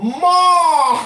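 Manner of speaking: very high, very loud, drawn-out nasal mall. Showing another speaker how to say the word: more nasal. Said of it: "Say it more with a more nasal".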